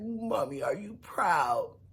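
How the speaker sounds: put-on baby-talk voice. Retelling what Tony said to his mom, imitating Tony's baby talk. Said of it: "Tony talked like a little kid".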